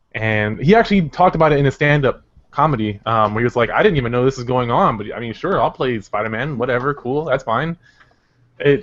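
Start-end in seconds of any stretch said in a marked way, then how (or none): none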